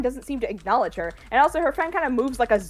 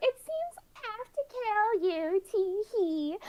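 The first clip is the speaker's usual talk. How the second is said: put-on very high tittering, cackling teenage-girl voice; 10 semitones higher, 6 dB quieter than usual. Retelling a scene where a new enemy appears: imitating a cackling teenage girl. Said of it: "cackling with the voice of a teenaged girl".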